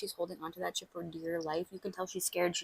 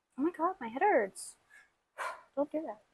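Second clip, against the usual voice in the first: out of breath, much higher pitched; 9 semitones higher than usual. Pulling up a Pinterest spread, speaking out of breath. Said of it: "I'm out of breath".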